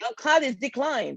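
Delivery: very loud acted announcing voice. Retelling how the person at the airport announced the declined card: mock loud announcement. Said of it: "said in a very loud voice".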